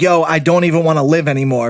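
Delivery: normal talking voice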